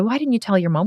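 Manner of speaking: normal talking voice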